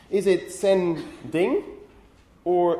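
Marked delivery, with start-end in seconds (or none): 0.5-1.6 "sending" slowly split at a syllable boundary. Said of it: "where are the syllable boundaries in English".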